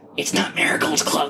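loud, high, carrying stage whisper. The game master voices Guppy speaking up to another character: Guppy's loud stage whisper. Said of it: "Guppy kind of whispers very loudly to you".

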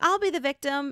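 high, eager, keen-sounding voice.

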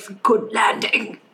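quiet mumble under the breath. A narrator voices a character as he stands up, muttered under his breath. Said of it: "You hear him say under his breath".

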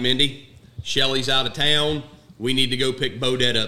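ordinary talk

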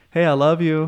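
ordinary talk

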